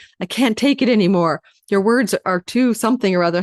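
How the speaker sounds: usual speaking voice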